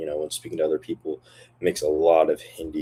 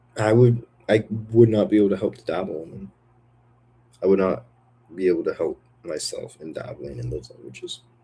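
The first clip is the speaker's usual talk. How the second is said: sad delivery, voice on the edge of crying; 3 semitones higher than usual. Speaker musing about languages they can't resist, sounding sad. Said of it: "Why do I sound sad? Why do I sound like I'm gonna cry?".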